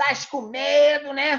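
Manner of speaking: put-on very slow, high northeastern Brazilian accent. Retelling what Brito Cunha said to him, imitating Brito Cunha's northeastern accent. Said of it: "Aquele sotaque nordestino dele".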